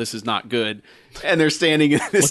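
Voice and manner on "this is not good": mock grave, dead serious tone. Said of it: "them just being dead serious".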